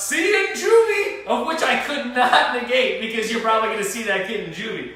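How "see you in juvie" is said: very high, stretched-out screaming. Retelling what a companion yelled at a kid: imitating someone screaming. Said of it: "decided to scream out".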